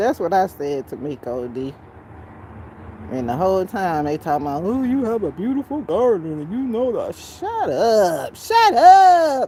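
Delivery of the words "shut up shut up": very high, very loud, very slow, shrill swooping voice. Speaker retelling their reply to people complimenting a garden, in an internet cousin voice. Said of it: "in my internet cousin voice".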